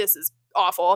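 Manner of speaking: irritated, fed-up, griping tone. Retelling a driver's post-race interview reaction: imitating an annoyed complaint. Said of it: "He's obviously pissed off 'cause he's like".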